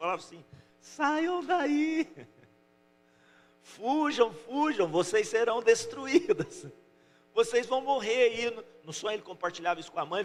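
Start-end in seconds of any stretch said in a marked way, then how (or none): 0.8-8.4 anguished, pleading, desperate drawn-out shout, pitched up. Retelling a child's dream of warning the ants: imitating desperate shouting. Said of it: "ele gritava com as formiguinhas".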